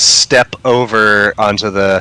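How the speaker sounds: ordinary talk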